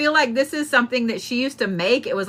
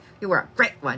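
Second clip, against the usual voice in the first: halting speech in short, broken-up bursts; 7 semitones lower, 3 dB quieter than usual. Retelling how she talked: imitating speech in spurts. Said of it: "these spurts like this".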